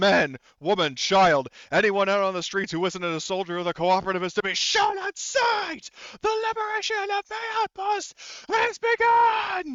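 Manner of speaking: very loud, high, furious, ballistic ranting scream. Voicing a warlord's announcement over loudspeakers to the town: screaming, going ballistic. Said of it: "you hear him just screaming and going absolutely ballistic".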